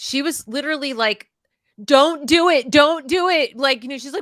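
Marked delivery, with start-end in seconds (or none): 1.8-3.6 play-acted very loud, high, frantic panicked pleading. Recalling watching a movie, speaker imitates the daughter freaking out. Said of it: "my daughter was freaking out".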